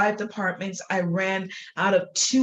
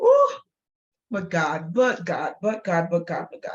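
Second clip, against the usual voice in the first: tearful, on the verge of crying, swooping pitch. Recalling eight years as admin for five departments, starting to cry. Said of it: "I guess I am going to cry".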